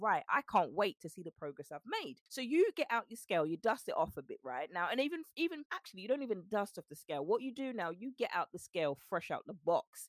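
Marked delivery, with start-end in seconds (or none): none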